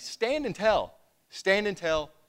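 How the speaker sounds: slow, high-pitched mock yell. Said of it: "he just kept yelling at me".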